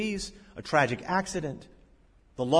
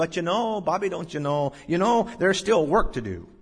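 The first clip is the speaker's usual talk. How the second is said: put-on Michigan accent; 3 semitones higher, 4 dB louder than usual. Retelling what an older man said to him, in that man's Michigan accent. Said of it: "in that Michigan accent".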